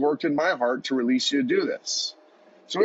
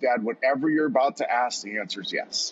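ordinary delivery

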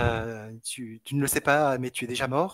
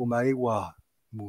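strongest, exaggerated put-on Japanese accent. The speaker quizzes listeners on a phrase, in the strongest japanese accent. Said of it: "avec mon accent japonais le plus marquant".

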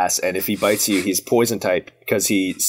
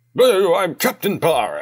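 put-on very high, slow, swooping, drawled blundering old British man; 10 semitones higher, 3 dB louder than usual. Guessing the captain's funny little voice: Captain Barra as blundering old Brit. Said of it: "like an old blundering British man".

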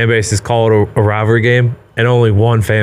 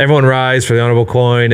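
usual speaking voice

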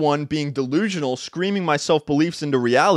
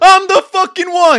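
very high, very loud screaming; 10 dB louder than usual. Speaker retells finding his dog wetting the carpet, retelling his own scream. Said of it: "I'm screaming".

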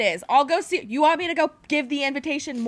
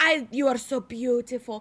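put-on creepy vampire voice. Retelling a movie trailer, quoting the vampire: imitating a creepy vampire with Scottish-Irish accent. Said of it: "creepy vampire Scottish Irish boy is like".

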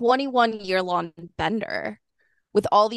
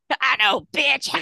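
pitched-up voice of a heavy smoker and drinker; 5 semitones higher than usual. Retelling what a cult leader said to a member: Mother God's heavy drinking voice. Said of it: "cigarette, like, heavy drinking voice".

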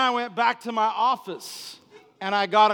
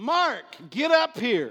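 unhurried, slow, steady called-out voice; 3 semitones higher than usual. Retelling a woman yelling at the speaker to come up, a retold yell. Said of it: "she yells at me".

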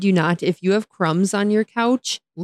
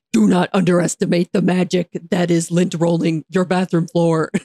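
unhinged, crazy put-on demon voice. Retelling being caught lint rolling the bathroom floor, the speaker quotes themself in a crazy demon voice. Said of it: "like crazy demon voice".

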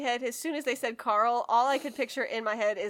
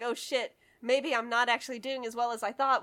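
normal talking voice

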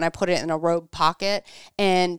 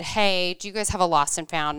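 plain

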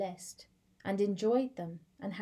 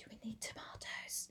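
whispered, quieter; 16 dB quieter than usual. Retelling a shop visit together: retelling own past whisper. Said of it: "I literally had to whisper to Cameron".

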